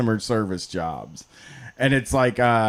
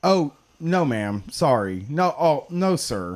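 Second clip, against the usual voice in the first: slow, polite, apologetic call-centre customer-service voice; 3 semitones higher than usual. Recalling past customer service work, the speaker slips into their customer service voice. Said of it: "customer service voice thing".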